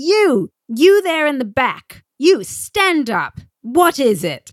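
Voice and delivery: put-on British accent, very slow, drawn-out, swooping. Retelling how he was called on at the back; British accent. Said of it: "You do a really good British accent".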